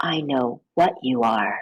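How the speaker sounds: half-whispered, dropped very low, deep. Reading a story aloud, voice the woman half-whispering her reply back to him. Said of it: "she whispers back".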